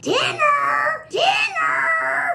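very high shouted call. Demonstrating a voice you love doing, call everybody in for dinner in a Marge Simpson voice. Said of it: "This is my Marge Simpson".

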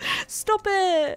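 emotional, high, loud, teary gush.

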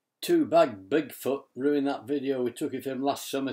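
ordinary delivery

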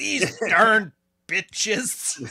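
crude, high, put-on American accent. Imitating the other speaker's put-on accent: mock American accent. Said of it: "an American accent".

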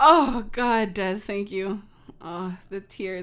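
words broken up by laughter throughout. Recovering after another speaker's joke, laughing while talking. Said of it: "that hurt my ribs laughing".

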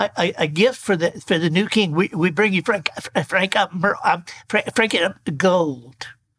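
stuttering, tongue-tied delivery. Voicing a wise man offering gifts to baby Jesus: Porky Pig voice. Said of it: "and Porky Pig, who, upon seeing baby Jesus, proclaims".

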